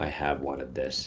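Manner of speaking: low, flat voice. Second-person narrator reads your reply, low and flat. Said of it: "your low voice, low and flat".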